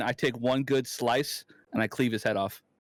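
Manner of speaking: plain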